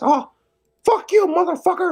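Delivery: put-on high cartoon mouse voice. Doing all of the voices yourself, swear in a Mickey Mouse voice. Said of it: "Mickey Mouse voice".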